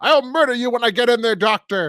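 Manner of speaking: shrieked screaming, way up high. Describing a character's iconic line screamed at the doctor, imitating a scream. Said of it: "even screaming at the doctor".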